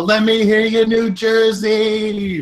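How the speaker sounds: very high, shrill, drawn-out wrestler-style yell. Playing a wrestler stomping on a downed opponent, yelling to the crowd. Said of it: "and I yell to the crowd".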